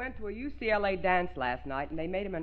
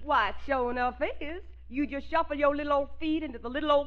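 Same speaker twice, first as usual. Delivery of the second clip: exaggerated put-on Southern accent, much higher; 5 semitones higher than usual. In a comic Dixieland skit, replying to the father's question: heavy Southern accent. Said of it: "accent as heavy as we can".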